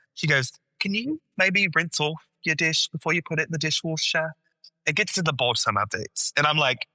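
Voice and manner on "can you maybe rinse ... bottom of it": put-on British accent. Retelling what Emma said at home in their joking accents, Emma's put-on British accent. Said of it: "we talk to each other in British accents".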